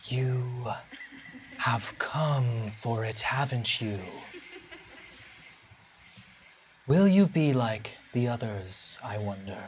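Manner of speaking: thin, airy, breathy voice. Voicing a figure who speaks to the players: thin, airy voice. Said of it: "In a thin, airy voice, he says".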